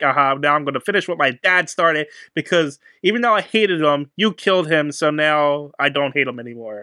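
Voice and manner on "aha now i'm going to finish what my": usual speaking voice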